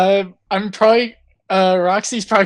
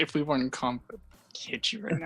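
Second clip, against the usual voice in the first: very quiet, hushed mutter under the breath; 5 semitones lower, 16 dB quieter than usual. Player voices Baz, covered in gargoyles mid-combat, Baz muttering to herself. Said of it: "She just kind of mutters to herself".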